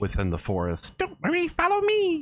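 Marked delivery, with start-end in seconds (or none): 1.0-2.2 small, very high voice, sounding far away. Narrating the game, the speaker voices a tiny voice crying out from the forest. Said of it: "you hear this really tiny voice cry out".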